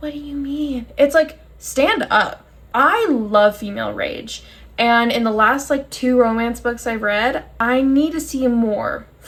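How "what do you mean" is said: hushed, under the breath. Retelling a romance book scene, the speaker quotes the woman in a hushed voice. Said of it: "in a hushed voice".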